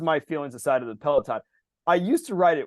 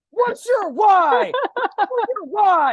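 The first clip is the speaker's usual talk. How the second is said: mock yelling, higher and louder; 7 dB louder than usual. Retelling how a workout instructor kept shouting at riders: imitating an instructor yelling. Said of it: "she would yell at me the entire time going".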